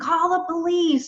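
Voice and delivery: play-acted frantic, very high-pitched panicked shrieking scream. Retelling a man calling about two moose fighting in the yard: retelling a scream. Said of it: "he's like screaming".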